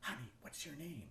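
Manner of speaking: quick, rushed, hushed little half-whisper. Retelling what a girl on stage whispered to the speaker, in a quick half-whisper. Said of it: "she whispers quickly".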